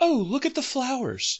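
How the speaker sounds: mock, totally offhand, very high voice. Retelling what a passing actress said: imitating a totally nonchalant line. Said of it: "Like, totally nonchalant".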